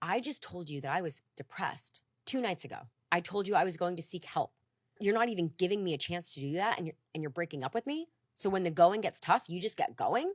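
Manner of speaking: mock-furious, acted raging voice. Retelling what was said while being broken up with: retelling a rage. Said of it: "the panic switched to rage".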